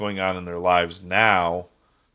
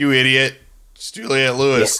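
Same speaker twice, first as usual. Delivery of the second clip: loud, high-pitched yelling. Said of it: "Jen's yelling at me in the background".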